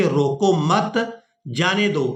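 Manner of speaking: slow, with clear pause right after मत. Showing how a pause changes an idiom's meaning: pause after मत. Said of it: "यानी एक लफ़्ज़ के बाद हम वक़्फ़ करें, ऐसे कहें".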